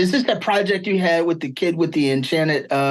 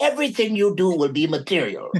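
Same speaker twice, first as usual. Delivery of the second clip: plain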